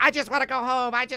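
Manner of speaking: play-acted, high, screamed-out outburst. Retelling a woman's words from a documentary recording: imitating someone screaming. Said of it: "she's, like, screaming".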